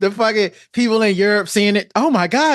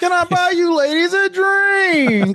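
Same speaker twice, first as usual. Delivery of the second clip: very high cartoony character voice, drawn-out words; 10 semitones higher than usual. Imagining that guy at a club, offering ladies a drink: imitating that guy's cartoon voice. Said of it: "Was he talking like that when he".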